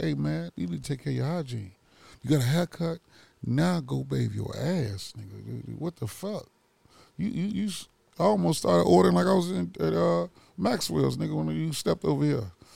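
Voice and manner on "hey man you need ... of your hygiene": soft tone, faster. Asked if they said it loudly, retelling their own words in a soft tone. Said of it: "in the soft tone".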